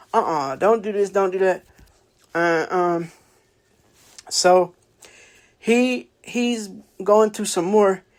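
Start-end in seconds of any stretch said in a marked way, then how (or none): none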